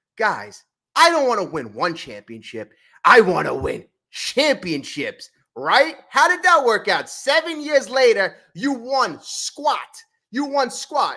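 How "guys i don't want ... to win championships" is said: very smug, boastful pronouncement. Retelling what Cashman said to everybody: imitating Cashman's smug tone. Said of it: "he said to everybody very smugly".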